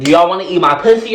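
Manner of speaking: loud, high-pitched, brazen, blurted-out yell. Retelling what was said to students staring at an assembly, retelling saying it very loud. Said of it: "it was very loud".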